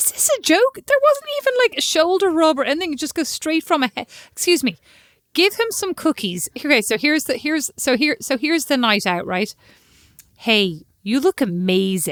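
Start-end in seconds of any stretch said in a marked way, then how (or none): 10.4-12.1 very slow, drawn-out, put-on American accent. Acting out a night out, complimenting someone, in a put-on american accent. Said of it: "I don't need an American accent".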